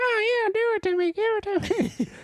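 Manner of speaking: squeaky, very high mocking tone. Mimicking a couple the speaker is friends with, in a put-on high mocking voice. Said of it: "you use a high voice".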